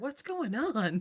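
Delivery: quiet whispered mutter. Voicing Owen, who whispers to the group: whispering to the group. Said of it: "will kinda whisper to the group".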